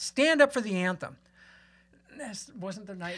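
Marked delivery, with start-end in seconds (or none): 0.0-1.2 mock, high, barked shouting yell. Retelling how a man in the crowd yelled at the speaker: imitating a man yelling. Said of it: "And he yelled it".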